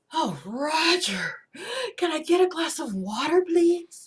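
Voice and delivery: sultry voice pitched very high. Describing drama queens and acting one out: sultry Jessica Rabbit voice. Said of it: "they do have a very sultry voice".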